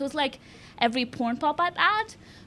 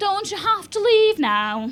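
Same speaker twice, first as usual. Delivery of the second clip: put-on English accent, high and raised; 6 semitones higher, 7 dB louder than usual. Recalling what a taxi driver said to him after Brexit, put-on English accent. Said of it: "That's my best English accent".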